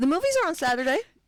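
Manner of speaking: questioning upward lilt rising on Saturday. Author explaining a speech habit to an interviewer, saying a statement with upward inflection. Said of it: "put an upward inflection".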